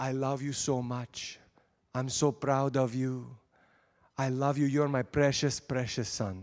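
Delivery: put-on Arabic accent, slow and drawn-out. Imitating Papa Nazim telling the speaker he loves him: imitating Papa Nazim's Arabic accent. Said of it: "don't make fun of my Arabic accent".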